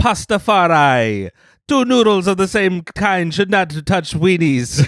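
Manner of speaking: put-on Jamaican accent. Joking with a friend about being a Pastafari, in a put-on Rastafarian accent. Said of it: "Why are you so good at this accent?".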